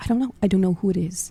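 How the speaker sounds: whispered voice. Retelling a late-night phone call about a knock: imitating own whisper. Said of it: "I'm whispering into the phone".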